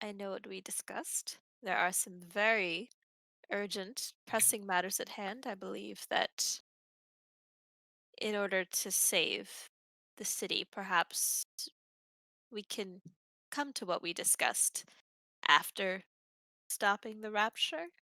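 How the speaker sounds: in a half-whisper throughout. Voicing a character who half-whispers to another about urgent matters: half-whispering in character.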